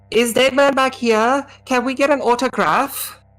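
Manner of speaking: put-on snotty, bratty teenager voice, pitched very high. A game master voices a girl reacting to the players' approach, in bratty teenage voice. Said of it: "In as kind of bratty teenage voice as she can".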